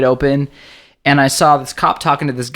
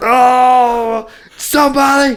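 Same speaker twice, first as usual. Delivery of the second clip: mock drunken-sounding wailing cry, very high, drawn-out scream; 10 semitones higher, 3 dB louder than usual. Retelling a wasted man getting up after being hit: imitating a drunk man screaming.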